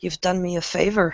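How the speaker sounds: whispering softly. Describing the scene, she hands Silvers the gun and speaks to him, whispering. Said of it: "and she whispers".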